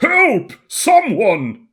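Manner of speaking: put-on high, loud old man voice crying out. Narrator voices Mayor Klaus calling out for help again; old man voice. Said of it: "I'm doing this voice a lot of times".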